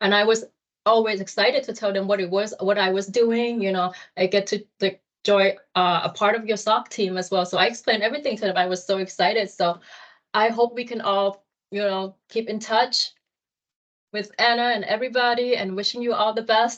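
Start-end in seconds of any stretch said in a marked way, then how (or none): 9.5-16.8 tearful voice, close to crying. Intern saying goodbye to the team at the end of an internship, about to cry. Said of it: "I'm cry right now".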